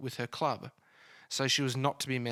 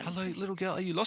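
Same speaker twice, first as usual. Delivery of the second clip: high, put-on French accent; 7 semitones higher than usual. Podcast host imagines a local speaking to a lost girl, in a put-on accent. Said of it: "sorry for the accent".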